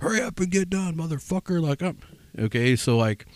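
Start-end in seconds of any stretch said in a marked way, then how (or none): 0.0-1.6 put-on, shrill, very high, loud hollering. Retelling how a boss hollers at workers: imitating a loud holler. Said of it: "loud and holler".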